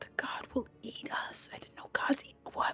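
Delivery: speaking in a whisper. Reacting in character to news that a god will eat them: whispering. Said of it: "Why am I whispering?".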